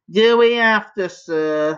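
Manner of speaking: groaning, stifling a yawn. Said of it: "moaned Dribbling Drew, stifling a yawn".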